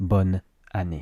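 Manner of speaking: brief pause after bonne before année. Showing the split that real people don't use, pause between bonne and année. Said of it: "we tend to think that there should be a pause in between the two words".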